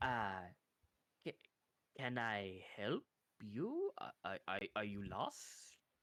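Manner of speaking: very low, slow, hushed, broken, halting speech. Startled game character answering the player back in Common, a little broken Common speech. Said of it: "a little bit broken".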